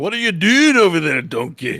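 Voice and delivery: put-on Scottish accent. Imitating a movie character's line: Mike Myers Scottish accent. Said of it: "she does it full in the Mike Myers, like, Scottish".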